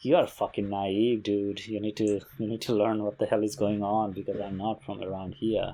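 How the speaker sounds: ordinary delivery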